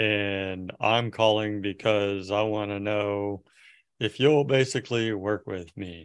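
put-on flat, low-energy reading. Coaching a caller to bring more energy, imitating Kevin's low-energy delivery. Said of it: "bring more energy, 'cause right now it's like".

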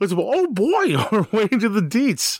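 squeaky voice, high-pitched and slow. Answering a co-host about getting into the game's details, in a terrible Mickey Mouse impersonation. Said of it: "That was the worst Mickey Mouse impersonation ever".

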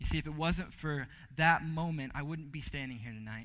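plain

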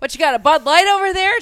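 shrill, very loud, high-pitched shout. Recounting a party where Tom kept shouting at people: imitating Tom yelling. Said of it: "Tom kept yelling".

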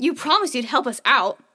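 hostile, confrontational, very aggressive delivery. Retelling what the older boy said to Doug: imitating an aggressive tone. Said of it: "in a very, like, aggressive tone".

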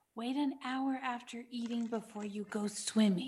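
hushed, very quiet half-whisper. Half-whispering advice to another character during a quiz: half-whispering in character. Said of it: "I whisper to Fury".

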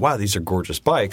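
ordinary talk

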